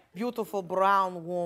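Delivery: put-on low, slow Russian accent.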